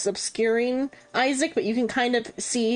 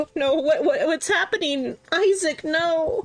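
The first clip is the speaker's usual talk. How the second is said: tearful, high-pitched weeping and sobbing; 6 semitones higher than usual. In a group scene, a player voices the wife by the body, crying. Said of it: "or she's crying. She's like".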